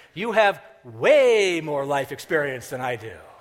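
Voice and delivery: heavy stress on the word "way". Repeating someone's remark and complaining about the stress on way. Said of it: "did he have to emphasize that word?".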